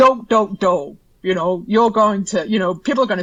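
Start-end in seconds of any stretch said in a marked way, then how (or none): 0.0-1.0 high-pitched animated cartoon character voice. Demonstrating rehearsing a word in a cartoon character's voice: Homer Simpson voice. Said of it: "if I do mine, which is Homer Simpson".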